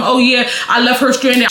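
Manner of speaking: ordinary talk, nothing marked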